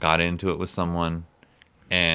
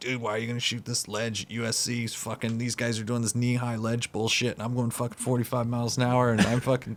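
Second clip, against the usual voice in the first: raised pitch, harsh, forceful delivery; 5 semitones higher, 4 dB quieter than usual. Retelling how a skater yelled at him: imitating Danny yelling. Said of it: "I remember Danny yelling at me".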